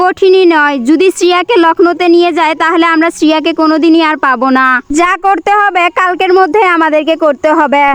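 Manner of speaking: plain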